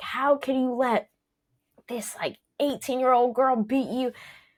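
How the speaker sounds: put-on hectoring coach bark, high, kept light. Speaker retelling her coach yelling at her after a loss: retelling a coach's yell. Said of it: "he's like yelling at me, like".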